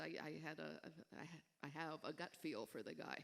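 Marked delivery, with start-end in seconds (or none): none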